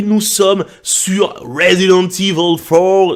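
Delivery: slow American accent pushed to the max. Opening a new gaming video series in French: exaggerated American accent. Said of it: "je pousse l'accent américain jusqu'à son apogée".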